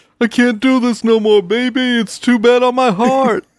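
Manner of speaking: very high, loud, belted commentator voice. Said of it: "back to Dick Vitale".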